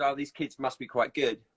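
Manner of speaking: ordinary delivery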